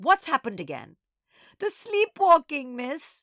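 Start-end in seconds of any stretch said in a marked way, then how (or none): 1.6-3.2 high, loud, howling, wailing voice. Nana answers the Doberman's question, howling. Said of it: "Nana howled".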